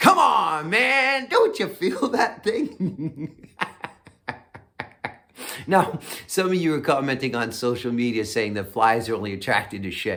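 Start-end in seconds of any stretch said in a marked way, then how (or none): 0.0-3.5 pitched-up, slow, drawn-out holler. Retelling how you yelled at the TV during a debate, imitation screaming in Joe Biden voice. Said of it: "I was screaming at the T V".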